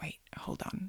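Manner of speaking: soft, unvoiced whisper.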